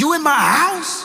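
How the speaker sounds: very high-pitched, threatening, menacing tone. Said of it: "Bass in voice".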